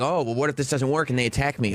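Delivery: plain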